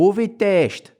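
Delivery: put-on very high, shouted yell in Glaswegian accent. Retelling how audience members at a Glasgow show kept heckling: shouting in Glaswegian accent. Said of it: "shout the words "COVID test" at me in a Glaswegian accent".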